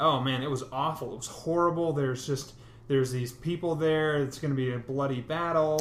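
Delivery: ordinary talk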